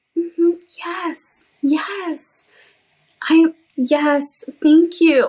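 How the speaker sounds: sweet, tender, meek voice, high and very slow. Retelling how she answered the interviewers: imitating own tender meek voice. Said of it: "So tender and meek".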